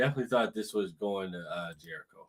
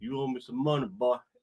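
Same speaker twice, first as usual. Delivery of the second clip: put-on Texas accent; 3 semitones higher than usual. Voicing Chris Jericho phoning Tony Khan: Chris Jericho in a Texas accent. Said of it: "why'd it have to be a Texas accent like that?".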